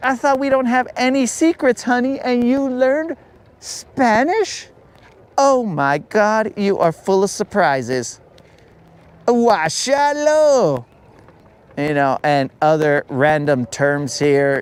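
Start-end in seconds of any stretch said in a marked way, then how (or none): 0.0-10.9 very high, swooping, put-on girly voice. Imagining a wife praising her husband: imitating a wife's girl voice. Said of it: "I don't do that many girl voices".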